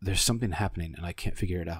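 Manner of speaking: hushed whisper. Voicing a woman who appears beside the player and whispers to them. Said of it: "she kind of whispers to you".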